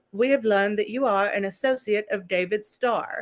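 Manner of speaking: put-on weird synthetic robotic female voice, British accent. Retelling a phone blast message, in a weird robotic British woman's voice. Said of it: "weird robotic woman with kind of a British accent".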